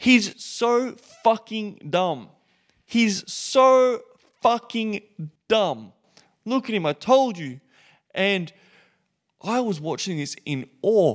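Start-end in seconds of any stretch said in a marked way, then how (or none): 0.0-7.6 mock high-pitched, venomous, ridiculing screaming. Retelling what a woman at a gender reveal yelled about him, imitating someone screaming. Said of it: "She was screaming".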